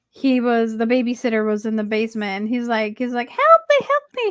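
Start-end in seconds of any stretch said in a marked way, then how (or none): 3.3-4.3 put-on very high, loud, raised annoying kid voice. Retelling a movie scene, imitating the annoying kid's voice. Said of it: "that annoying kid with the voice".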